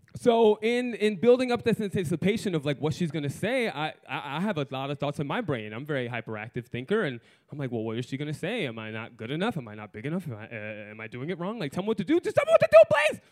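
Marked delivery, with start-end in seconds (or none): none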